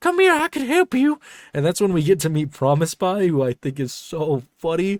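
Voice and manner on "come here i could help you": strange, very high-pitched odd character voice, called out. Retelling a cartoon scene where a pie offers help: Promise Pie voice. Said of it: "just his voice initially".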